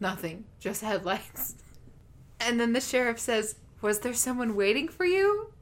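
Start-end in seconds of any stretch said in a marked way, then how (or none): 0.0-1.5 acted flat delivery, much quieter. Retelling a scene, the speaker quotes Maria answering the sheriff, imitating Maria's deadpan reply. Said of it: "And just deadpan".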